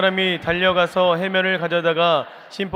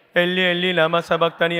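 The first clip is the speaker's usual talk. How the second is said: normal talking voice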